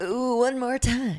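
cheesy, high, annoying on-air radio DJ voice. Mimicking the other speaker's bit: imitating an annoying radio guy voice. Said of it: "It's so radio guy-y when you do that".

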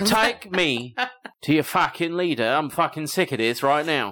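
put-on Cockney accent. Imagining aliens landing and demanding the leader, Cockney alien accent. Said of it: "had a Cockney accent".

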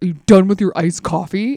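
put-on blunt, demanding, aggressive, pushy tone. Driving him home, the speaker retells his question, mock-aggressive. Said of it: "he kind of aggressively goes".

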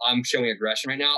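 ordinary delivery

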